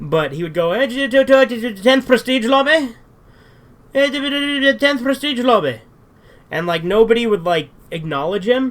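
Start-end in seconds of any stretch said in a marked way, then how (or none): 0.7-5.8 put-on hard-to-follow Irish accent, high-pitched, very slow. Retelling a Modern Warfare 2 lobby, the speaker imitates an Irish kid's accent. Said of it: "this Irish kid who was very hard to understand".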